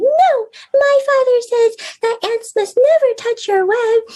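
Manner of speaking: tiny, squeaky, very high ant voice. Storyteller showing how they voice the characters in a story: little ant voice. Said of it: "I get to be the little ant saying".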